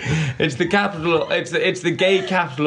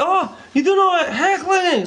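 very high, drawn-out put-on Scottish accent; 13 semitones higher than usual. Retelling what some people said to him about heckling, in a scottish accent. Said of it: "in their Scottish accent".

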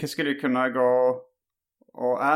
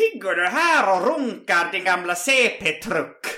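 joking fake Finnish accent, pitched up; 7 semitones higher, 4 dB louder than usual. Retelling a friend who came into the speaker's room joking: put-on Finnish accent. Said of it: "med en finsk brytning sa".

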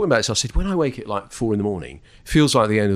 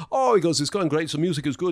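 put-on German accent, much higher pitch; 6 semitones higher, 4 dB quieter than usual. Retelling Adolf's answer about how the show is going, in a German accent. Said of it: "he had German accent".

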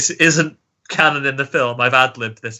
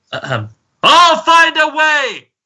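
mock shout, very high and loud, pitch swinging wildly; 5 dB louder than usual. Giving a quiz clue, the speaker quotes the character, shouting a quoted line. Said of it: "Probably just peaked the mics".

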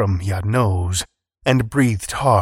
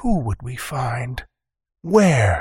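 hushed whisper; 2 semitones higher than usual. Narrator reads Kuikottle answering with questions, whispered. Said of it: "Kuikottle whispered".

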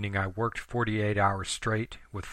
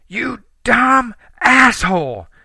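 very high, very loud, shrill, furious scream; 15 dB louder than usual. Reading a story aloud, voicing Sammy as she turns on the narrator, screaming angrily. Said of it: "she screamed".

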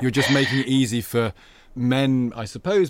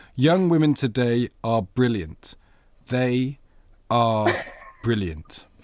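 slow, halting, deliberate, clearly articulated speech. Reading the guest's own quote back to them, slow and clear. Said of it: "I'm going to say it slowly and clearly".

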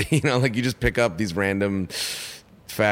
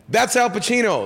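acted, high, startled and shocked yell; 5 dB louder than usual. Recounting seeing a man in sunglasses at dusk, retelling a shocked yell. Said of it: "I was so shocked that I yelled".

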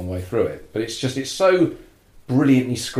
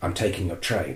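put-on British accent, lower and quieter; 3 semitones lower, 5 dB quieter than usual. Describing a film where everyone trash talks each other, quote a character in Robert Shaw's British accent. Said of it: "Robert Shaw's British accent".

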